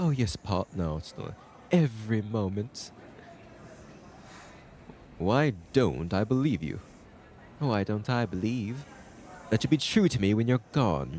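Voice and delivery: put-on British accent. Rehearsing a scene addressed to Paul, in a put-on British accent. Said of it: "I got channel my British accent here".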